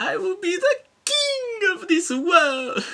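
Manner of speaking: very high pitch, loud and slowly drawn out. Quoting a game character's line in his weird voice: imitating Arius's bad voice. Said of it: "remember Arius for being like".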